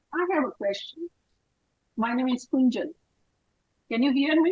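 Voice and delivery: very quiet, faint voice, barely carrying. Asking to be heard before a question, very quiet voice. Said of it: "your voice is very low".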